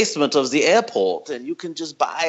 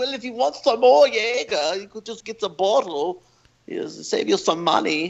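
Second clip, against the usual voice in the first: odd put-on German accent, pitched up; 6 semitones higher than usual. Retelling what a guy said about buying the Jaeger bottle, in a weird German accent. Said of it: "weird German accent".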